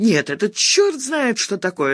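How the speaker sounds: worked-up, heated outburst. Hungry and told there is no food at home, the narrator works herself up. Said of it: "распаляя себя".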